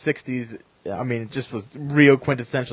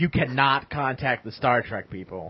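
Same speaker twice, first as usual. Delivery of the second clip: plain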